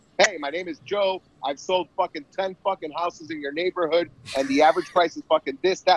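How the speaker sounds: self-assured, assertive, confident salesman delivery. Retelling a realtor's call about selling the house: imitating a confident, assertive realtor. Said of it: "this guy's got his fucking game on".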